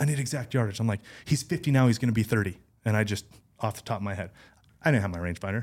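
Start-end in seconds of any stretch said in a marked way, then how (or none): 0.0-0.8 mock yelling, higher pitch. Speaker retells what another man was yelling at them: imitating someone yelling. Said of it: "he's like yelling at me".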